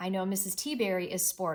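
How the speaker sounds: ordinary delivery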